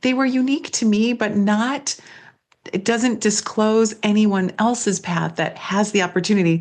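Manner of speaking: ordinary talk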